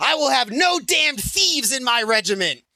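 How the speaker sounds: very high, furious, parade-ground style shout. Telling a story, acting out the colonel yelling at his regiment, retelling a shout. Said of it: "Butterfield shouts".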